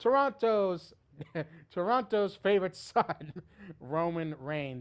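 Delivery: heavy, all-out sarcasm. Naming the wrestler the whole crowd was all over: heavy sarcasm. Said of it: "with every bit of sarcasm that I can possibly muster".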